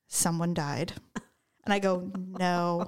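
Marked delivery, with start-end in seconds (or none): 0.1-0.9 mock flat deadpan delivery. Retelling what she said after getting back in the car, imitating her deadpan delivery. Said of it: "she's deadpan".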